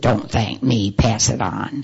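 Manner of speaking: low, gruff, rough-edged voice. Recalling a man's answer when the speaker tried to thank him, imitating a gruff voice. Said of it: "in his gruff voice".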